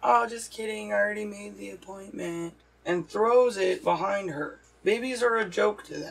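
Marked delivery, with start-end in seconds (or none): 0.0-2.5 giggly speech broken up by laughter. Retelling the same video's twist: imitating someone laughing while talking. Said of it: "then she starts laughing and says".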